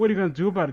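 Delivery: ordinary delivery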